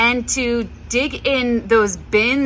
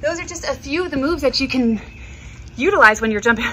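breathless, winded, out-of-breath speech; 3 semitones higher than usual. Right after demonstrating jumping moves, the instructor talks to viewers, out of breath. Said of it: "I'm out of breath".

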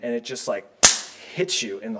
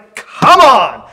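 very loud, very high preaching cry; 11 semitones higher, 16 dB louder than usual. Showing how to deliver the preaching point while waving arms: raised preaching voice. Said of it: "you raise your voice".

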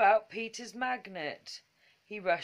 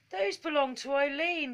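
indignant cry, much higher pitch; 6 semitones higher than usual. The toys cry out as a goblin runs off with the things, indignant cry. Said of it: "cried the toys indignantly".

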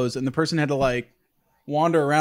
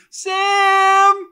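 put-on distressed shout, higher and louder; 5 dB louder than usual. Retelling a mom calling outside in the front yard: imitating distressed calling out. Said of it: "you could hear the distress in her voice".

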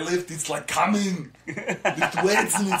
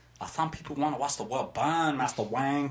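put-on butler voice with a Chinese accent; 4 semitones lower, 6 dB quieter than usual. Doing a Chinese Batman bit for friends: Chinese Alfred voice. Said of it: "my Chinese Batman thing".

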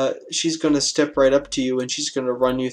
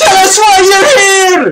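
shrill, very high-pitched, loud yell; 14 dB louder than usual. Voicing an attacker questioning a wounded player: yelling in character. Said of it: "she yells".

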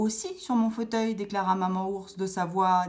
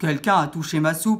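big bear voice, much louder; 3 semitones lower, 7 dB louder than usual. In the tale of the three bears, Papa Ours exclaims at the table in his big voice. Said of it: "Papa Ours exclama de sa grosse voix".

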